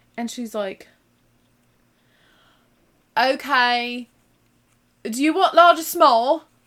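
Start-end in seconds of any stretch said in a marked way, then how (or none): 3.1-6.3 put-on loud, high-pitched Cumbrian accent. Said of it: "the redneck accent of England".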